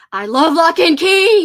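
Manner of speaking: very loud, high-pitched yell. Reading out a message written in all caps: yelled, like all caps. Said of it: "I tried to yell it like she wrote in all caps".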